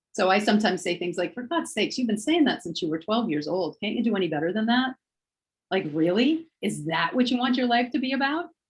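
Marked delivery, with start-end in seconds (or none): 1.3-8.4 sarcastic, snarky, needling tone. Showing how an inner voice challenges an old thought: snarky inner voice. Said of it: "of my higher mind is sometimes a little snarky".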